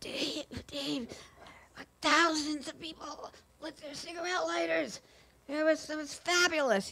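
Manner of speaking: high, hushed half-whisper from a voice that's gone. Retelling what a father who lost his voice told the brother: imitating father's lost-voice half-whisper. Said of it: "trying to whisper".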